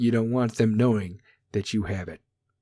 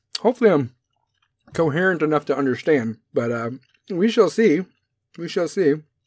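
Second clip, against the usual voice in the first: talking while chewing with mouth full of food; 5 semitones higher than usual. Mouth full of Mike and Ike's, the speaker talks to viewers while chewing. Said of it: "Still chewing these things".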